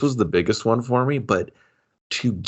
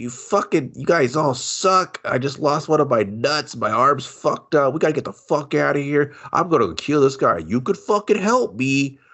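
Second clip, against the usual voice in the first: rambling, run-on outpouring without stopping; 6 semitones higher than usual. Retelling a movie scene where Nick Cage rants at the others: imitating Nick Cage rambling. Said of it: "He just starts rambling".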